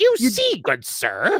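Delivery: very slow put-on voice, each word stretched, pitch swooping. Showing a chat request, a Paul Heyman voice. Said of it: "my Paul Heyman voice".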